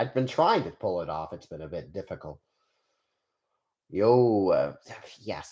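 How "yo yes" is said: attempted Spanish accent that doesn't quite land. Testing out a voice, the speaker gives an attempted spanish accent. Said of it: "I wanted to have a Spanish accent".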